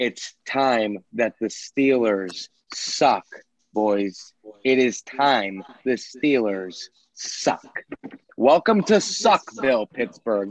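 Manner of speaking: slightly angry, bitter, gloating tone. A fan declares it's time the Steelers suck, a little angry. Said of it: "You have a little bit of anger in your voice".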